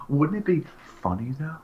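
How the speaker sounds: put-on whisper on last words. Retelling a man's suggestion to put a camera in a kid's room: imitating whispering the last words. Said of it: "you have to whisper the last few words".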